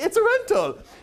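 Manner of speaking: very high, funny put-on European accent. Showing how to greet people flying by, in a funny European accent. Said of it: "say it in a sort of funny European, like".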